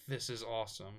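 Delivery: ordinary talk, nothing marked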